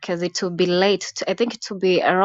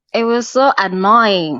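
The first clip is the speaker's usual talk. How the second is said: ordinary talk, nothing marked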